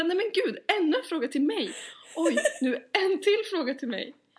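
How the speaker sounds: high, loud mock exasperation. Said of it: "Du bara".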